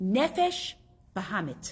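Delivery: "Nefesh Bahamit" spelled out slowly with stress. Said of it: "But listen to the words".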